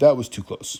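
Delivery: ordinary delivery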